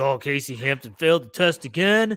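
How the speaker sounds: play-acted fed-up, pissed-off, irritated coach grumbling. Retelling how Bill Cowher reacted to a player: mock-pissed Bill Cowher. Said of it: "and he was all pissed".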